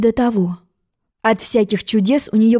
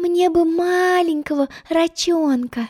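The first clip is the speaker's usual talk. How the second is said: dreamy, daydreaming, pitched-up voice; 7 semitones higher, 3 dB quieter than usual. Narrator voicing a girl leaning over the side of the boat, dreamy. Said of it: "Мечтательно произнесла Алиса".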